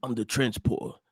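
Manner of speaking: put-on low, gruff action-hero voice.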